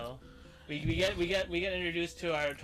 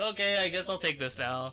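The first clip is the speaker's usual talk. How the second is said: usual speaking voice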